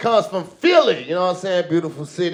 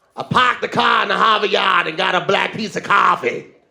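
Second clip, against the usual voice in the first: fake, put-on Boston accent. Offering to let everyone hear their Boston accent: put-on Boston accent. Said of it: "Y'all want to hear my Boston accent?".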